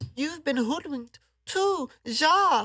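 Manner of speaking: put-on German accent, pitched very high. Speaker quoting a pair of film characters, doing Gretel's German accent. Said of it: "their accent".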